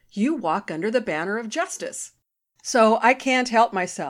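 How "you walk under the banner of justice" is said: ordinary delivery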